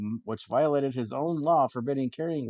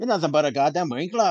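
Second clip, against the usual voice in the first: loud put-on Scottish accent; 3 semitones higher, 5 dB louder than usual. Showing how to call someone a winkler; Scottish accent. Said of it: "you have to do it with an accent".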